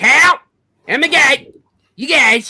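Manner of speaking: very loud cartoon voice, pitch swinging wildly. Asked by another speaker to show it, doing a Cartman voice. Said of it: "let's hear your Cartman voice".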